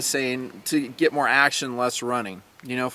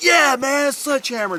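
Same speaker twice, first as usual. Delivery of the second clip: put-on excited, hyped voice, higher; 12 semitones higher than usual. Imitating a first-timer arriving at the sledgehammer course: imitating a stoked first-timer. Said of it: "they're not quite at that, you know, Stoke level".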